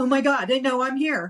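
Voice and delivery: sudden freaked-out panicked tone. Retelling the moment of being called on in a meeting: retelling own panicked reaction. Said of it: "I freaking flipped out".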